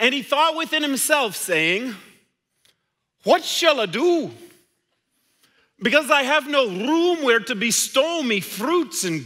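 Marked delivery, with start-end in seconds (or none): 3.2-9.3 put-on Scottish accent, brogue-style storytelling narration. Performing a parable for listeners who might remember this, imitating Bruce Kuhn's Scottish brogue. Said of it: "he did it in a Scottish brogue".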